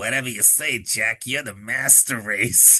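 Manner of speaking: odd, weird voice from deep in the throat. Discussing a film scene, quoting an actor's line: weird throaty voice. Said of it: "he's got this really weird like throaty voice".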